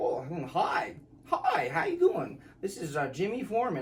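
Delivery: spectacular put-on voice, high and swooping.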